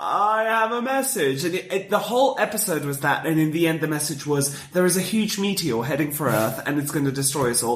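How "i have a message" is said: very slow, drawn-out, crawling alien voice. Retelling a tv episode where an alien arrives with a message, very slow alien speech. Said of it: "he speaks so slowly that he's like".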